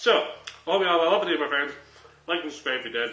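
speaking with mouth full, chewing. Signing off a video, the speaker is still chewing: talking with mouth full. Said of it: "I'm still chewing".

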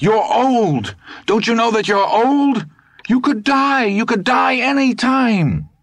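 anguished, very high, agonized howling cry. Speaking to Dusander, his voice suddenly rises: agonized howl. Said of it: "his voice suddenly rose to an agonized howl".

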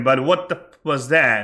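normal talking voice

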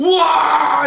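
frightened screaming.

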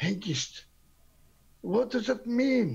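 guarded, slightly hushed, careful voice. Playing a character in a confined space where noise travels, ask a companion in a hushed tone. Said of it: "in a hushed tone".

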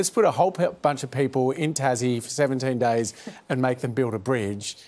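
usual speaking voice

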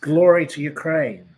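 loud, rousing, shouted rallying cry.

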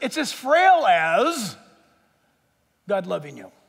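sarcastic tone. Preaching that God's love is frail, then taking it back: sarcastic. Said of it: "I said that sarcastically".

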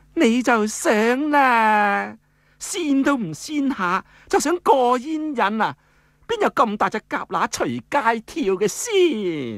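sweet, flirty, coquettish voice, very high-pitched. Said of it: "嗲声嗲气咁讲啦".

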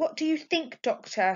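with a sigh. Reading a mother asking the doctor what he thinks, sighing. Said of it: "Sighed her mother".

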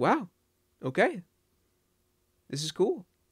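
put-on casual, unimpressed tone with swooping pitch. Imitating a runner's reaction to getting world record: imitating a flat, unexcited reaction. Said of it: "This guy's just like".

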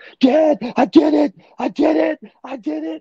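very high, loud, drawn-out excited shouting. A father retells his son's call after a solo flight, imitating his son screaming excitedly. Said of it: "like he was screaming".

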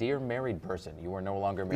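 ordinary talk, nothing marked

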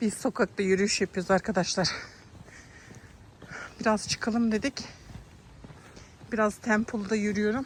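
breathless, panting. Person filming a neighborhood walk speaks to viewers, out of breath. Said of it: "Nefes nefese kalmış olabilirim".

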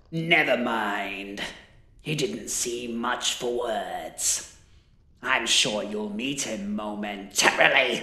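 rough, gravelly wizard voice, "mind" drawn out. The wizard speaks to the remaining brother after burning the other one, gravelly voice. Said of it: "Rarely had the wizard been able to halt his tongue in a moment of reverence. ... gravelly voice echoed down the dank alleyway".

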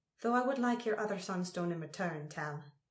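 ordinary delivery

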